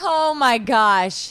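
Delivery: screaming in fright. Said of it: "I didn't mean to scream in your ear".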